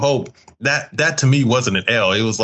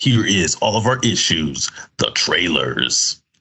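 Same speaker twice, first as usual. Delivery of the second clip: low, eerie, spooky horror-trailer narration voice; 5 semitones lower than usual. Introducing the podcast's trailer segment, the host uses a spooky voice. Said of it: "that was my good spooky voice".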